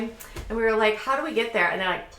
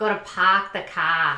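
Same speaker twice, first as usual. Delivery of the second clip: put-on Boston accent; 3 semitones lower than usual. Asked if they can do one, speaker tries a put-on Boston accent. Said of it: "Can I do a Boston accent?".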